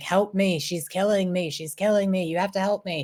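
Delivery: acted-out, imploring, pleading, begging cry. Retelling a story where a spirit begs a man: imitating Vaatu pleading. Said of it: "pleading for help".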